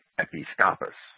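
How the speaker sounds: episcopus with stress on the second syllable, pi. Giving Liddell and Scott's stress for the word: episcopus stressed on pi. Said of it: "Liddell and Scott stress it on the I".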